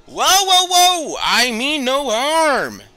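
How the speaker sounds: shrill yell, very loud and very high. A man on a boat drifting toward the group yells out to them. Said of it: "you hear the man yell out".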